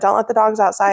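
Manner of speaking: plain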